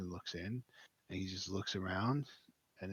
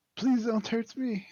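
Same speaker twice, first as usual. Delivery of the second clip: put-on frightened child voice screaming loudly; 13 dB louder than usual. Narrating a scene where the closest kid looks at you: child screaming. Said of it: "and screams".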